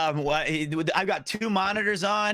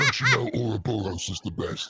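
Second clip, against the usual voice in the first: put-on very deep voice, pitched even lower; 8 semitones lower than usual. Retelling a friend's messages about a card game: imitating Connor. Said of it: "you do an impersonation of him very well".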